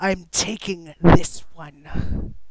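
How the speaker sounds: very loud, rasping, gravelly dark proclamation, booming. Narrating a lipless figure holding Kat, she announces: dark gravelly voice. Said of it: "announces in this dark, gravelly voice".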